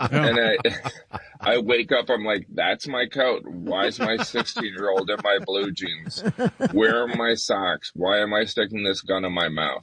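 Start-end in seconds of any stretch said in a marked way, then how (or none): none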